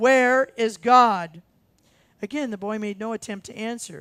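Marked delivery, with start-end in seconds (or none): 0.0-1.4 very loud, sterner, demanding preacher's voice. Telling a joke, voicing a preacher who repeats the question: sterner tone. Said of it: "in an even sterner tone".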